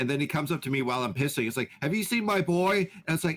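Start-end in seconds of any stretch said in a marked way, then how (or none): 1.8-2.9 desperate, frantic, high-pitched voice. Retelling a man searching the bathroom for his son: imitating a frantic father.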